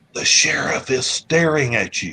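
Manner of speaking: secretive, hushed half-whisper. Retelling how a lady at a crowded meeting leaned over, retelling a half-whisper. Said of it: "she whispers".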